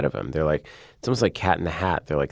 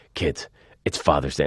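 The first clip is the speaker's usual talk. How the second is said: menacing, terrifying, threatening tone; 3 semitones lower than usual. Retelling Keanu Reeves saying a line to kids on set: imitating Keanu Reeves, menacing. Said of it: "really going John Wick on these kids and you're terrifying".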